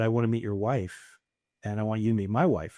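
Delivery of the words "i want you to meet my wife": normal talking voice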